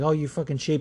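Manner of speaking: ordinary talk, nothing marked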